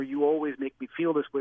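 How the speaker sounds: ordinary delivery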